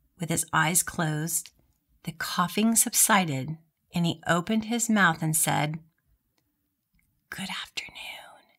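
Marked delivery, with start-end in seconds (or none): 7.3-8.4 faint, soft, hoarse whisper. Retelling the first words the voice spoke: imitating a soft whispery sore-throat voice. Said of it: "in the softest voice, like a whisper".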